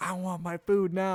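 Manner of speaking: put-on play-acted little kid fit, high and drawn-out. Retelling a child demanding hot food: imitating a child throwing a fit. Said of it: "Peyton's throwing a fit".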